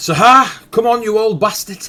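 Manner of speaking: shrill, very high, very loud, far-carrying yell. Narrating the game scene, voice a character shouting back to Sahar: shouting back. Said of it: "Shouts back".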